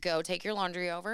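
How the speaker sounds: ordinary talk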